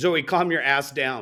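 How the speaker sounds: ordinary delivery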